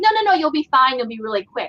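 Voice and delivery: ordinary talk, nothing marked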